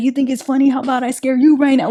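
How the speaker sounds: furious, angry, going-off rant. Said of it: "going off on them".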